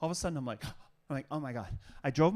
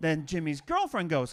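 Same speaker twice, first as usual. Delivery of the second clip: plain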